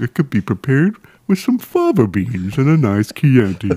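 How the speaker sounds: exaggerated horse voice. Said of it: "That's the ultimate horse voice".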